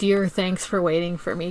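plain

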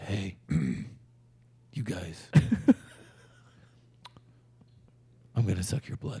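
very quiet, very slow, dull whisper. Joking about a new Batman casting, imitating Robert Pattinson as a dull Batman. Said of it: "the dullest Batman ever. ... he's like".

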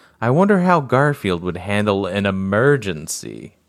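normal talking voice

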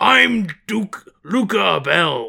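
put-on character voice, slow, every word dragged, rough. Imitating Duke Abel, who sounds like a professional wrestler: Duke Abel voice. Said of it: "sounds like somebody doing a fake impression of a video game character".

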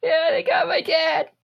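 put-on tearful, crying child voice.

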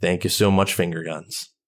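dejected, downcast, glum tone. Closing the podcast, the host thanks supporters; dejected. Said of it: "You sound so dejected saying".

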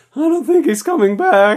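put-on very high, squeaky teen voice with voice cracks. Speaker explains where the voice came from, doing the Simpsons pimply teen voice crack. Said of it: "where I do the voice crack".

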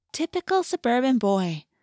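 fond, affectionate tone. Narrating Cassie's reply to Jake about his fishing, affectionate. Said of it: "she said affectionately".

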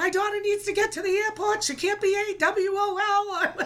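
acted scream, high-pitched. A parent on the phone in traffic retells what they screamed: retelling her screaming. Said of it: "And I'm screaming".

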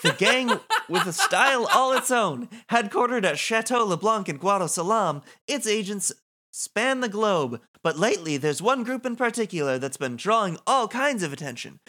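upbeat, patter-style news anchor delivery. Voicing a game character who now hosts a news program, news anchor delivery. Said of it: "Now she's the host of a news program. / she was like your kind of like stand-in for what a low-level Yevon devotee might look like, someone who just really believes she was like she's like an acolyte".

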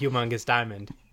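ordinary delivery

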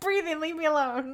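put-on very high, loud, furious child-like outburst. A mother retells her son's reply when told to stop and breathe; mock-angry. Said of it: "still really angry".

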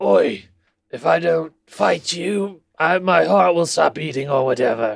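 put-on British accent. Trying a requested British tough-guy voice: Jason Statham impression. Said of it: "this is exactly Jason Statham in the Crank films".

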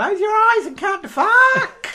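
high, loud, drawn-out scream. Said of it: "How is he gonna scream that in the manner of Jimmy Havoc?".

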